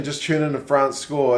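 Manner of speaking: ordinary delivery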